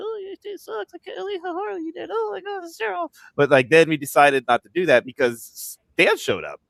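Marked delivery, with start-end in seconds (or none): 0.0-3.1 very high-pitched, nasty-sounding voice. Showing the voice planned for a ventriloquist bit: Evil Scott voice. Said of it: "ventriloquist like an Evil Scott and be like".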